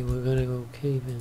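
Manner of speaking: soft, flat, bored, unenthusiastic deadpan voice. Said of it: "You sound so enthusiastic".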